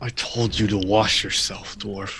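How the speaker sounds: ever so slight, faint half-whisper. A player's character, back against the wall near a troll, half-whispering ever so slightly. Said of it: "I'll whisper ever so slightly".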